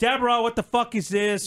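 put-on screaming. Retelling getting irritated at deborah over another elf: retelling own screaming. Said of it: "I start screaming".

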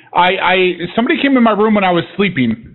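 plain

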